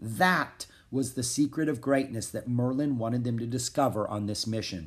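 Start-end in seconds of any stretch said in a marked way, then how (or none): none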